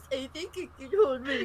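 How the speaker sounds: teasing, mocking, taunting tone. Narrating a scene where Leo mockingly imitates his sibling, in Camille's voice. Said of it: "Leo mockingly in Camille's voice".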